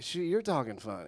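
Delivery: ordinary talk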